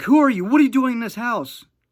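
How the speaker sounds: very high, very loud screaming through sobs. Retelling someone panicking at night in the house, retelling screaming and crying. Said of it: "screaming and crying".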